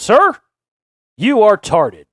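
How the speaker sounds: loud, swooping call-out. Showing listeners how to call out someone acting badly in public: loud voice. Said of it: "Do it in a loud voice like that".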